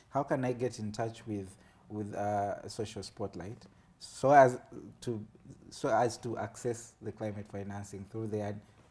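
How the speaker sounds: ordinary talk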